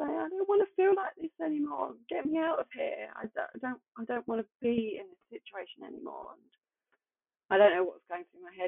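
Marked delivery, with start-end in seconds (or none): 0.2-6.3 acted crying and screaming at once. Recalling throwing oneself on the ground before God, retelling crying and screaming. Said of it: "crying my eyes out and just screaming at him".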